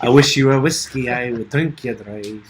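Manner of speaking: put-on Scottish accent. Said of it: "That was Scottish".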